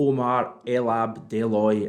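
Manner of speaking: slow, careful, deliberately drawn-out name pronunciation. Naming a transfer target after several takes: saying the name very slowly. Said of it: "I'm saying that very slowly".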